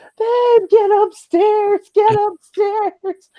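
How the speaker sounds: very high, very slow, stretched-out holler. Retelling how a partner called from upstairs: imitating someone yelling. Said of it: "He's yelling for me".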